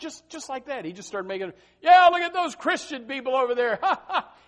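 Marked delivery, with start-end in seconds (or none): 1.8-4.2 mock scornful jeering, very high-pitched and loud. Telling about a dunk-tank clown who mocked the church, imitating his mockery. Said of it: "he started making fun of them".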